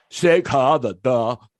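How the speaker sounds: put-on playful, hammed-up, thick Austrian accent. Retelling how Eddie repeated Arnold's first words, in Arnold's thick Austrian accent. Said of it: "accent and all".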